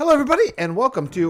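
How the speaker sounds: voice breaking, cracking, very high. Opening the recording with a greeting early in the morning: voice cracking. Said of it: "did my voices crack?".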